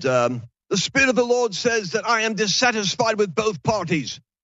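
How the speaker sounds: put-on South African accent. Quoting a prophet's prophecy, in his south african accent. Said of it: "He had this South African accent".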